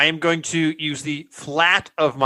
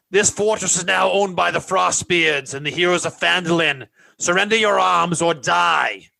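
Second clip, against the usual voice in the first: called out like a war cry; 3 semitones higher than usual. Declaring to enemy goblins that the fortress is taken: shouting as loud as possible. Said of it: "as loud as I can".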